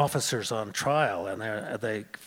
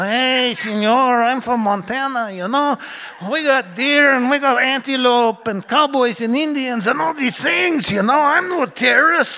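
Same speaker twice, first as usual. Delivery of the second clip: fake cheap Mexican accent, much higher, louder; 11 dB louder than usual. Retelling how he answered people wondering what he was doing, cheap Mexican accent. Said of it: "I go into this cheap Mexican accent".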